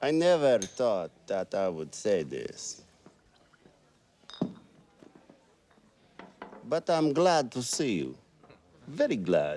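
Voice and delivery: very fake put-on Russian accent. A film character greets someone in the fakest Russian accent. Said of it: "Is like the fakest Russian accent in the world".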